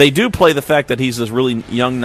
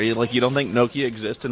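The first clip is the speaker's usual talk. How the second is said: ordinary talk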